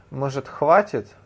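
ordinary delivery

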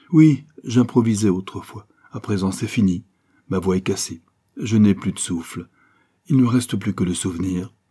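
ordinary delivery

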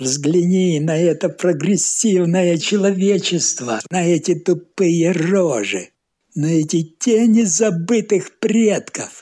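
worked-up, excited, high-pitched ranting holler. The narrator's new acquaintance, drinking over loud accordion music, excitedly shouting. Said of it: "возбужденно кричал".

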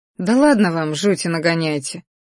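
ordinary delivery

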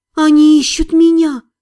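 breathed almost inaudibly. A young woman breathes the words to her companions, barely audible. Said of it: "Едва слышно выдохнула она".

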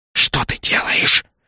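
hissing, sibilant, hissed delivery. Narrator reads Nak's line to the girl chasing another craft, hissed. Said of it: "прошипел Нак".

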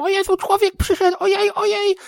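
shrill, piping, very high, squeaky little dwarf voice. Retelling little game dwarves reacting to a person's arrival, squeaky little voice. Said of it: "oni piskliwymi głosikami".

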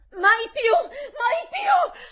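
loud, shrill, slow, drawn-out high cry. Narrating crying out to a visitor while holding a child, shrill cry. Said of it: "gridai con voce stridula".

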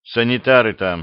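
calm, composed. Repin speaks to the lieutenant and Namakonov at night, calm. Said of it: "спокойно сказал Репин".

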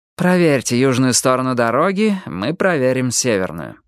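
ordinary delivery

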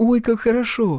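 very high, genuinely glad, sincerely delighted exclamation. Narrator reads a woman's reply to a newcomer's answer, sincerely delighted. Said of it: "вполне искренне обрадовалась Ерохина".

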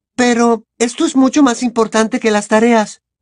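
high, protesting tone, pushing back hard. Hermione answers Ron's complaint: protesting. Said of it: "protestó Hermione".

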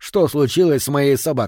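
plain

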